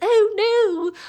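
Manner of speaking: mock breezy, offhand, flippant, very high voice. Retelling how a character reacted, imitating a flippant oh no. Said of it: "Like it was that tone".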